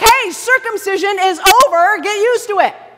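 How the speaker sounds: blunt scolding yell. Describing how he yells at the Galatians, imitating someone yelling. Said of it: "When he's yelling at the Galatians".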